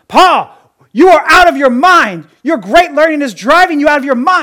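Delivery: very loud, high-pitched yell. Reading Festus interrupting Paul's defense, yelling. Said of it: "I had to yell it".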